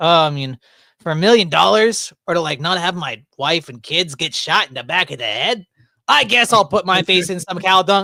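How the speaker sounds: put-on Yiddish-inflected accent.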